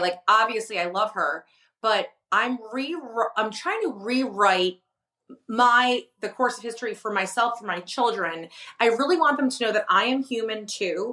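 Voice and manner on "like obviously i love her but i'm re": ordinary delivery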